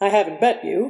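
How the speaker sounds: ordinary delivery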